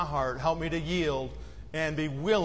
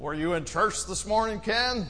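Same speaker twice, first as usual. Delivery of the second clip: put-on drunk slurred words, slower; 4 semitones higher than usual. Retelling a drunk man asking the speaker about church, imitating drunk slurring. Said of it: "he'd be slurring his words".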